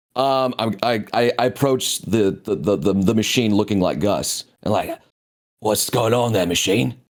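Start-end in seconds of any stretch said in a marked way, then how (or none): 5.6-6.9 rough, gruff, put-on British accent. Player's character approaches the machine and questions it; gruff British voice. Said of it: "kind of like gruff British voice I do".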